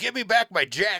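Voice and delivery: shrill, very high, very loud yelling. Retelling a comedian's joke about a driver yelling in traffic: imitating someone yelling. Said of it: "So I just yelled back".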